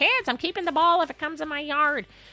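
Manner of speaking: put-on high old-woman calling voice. Radio host, agreeing with the previous speaker, does a grandma on the porch voice. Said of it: "I hate to sound like the grandma on the porch".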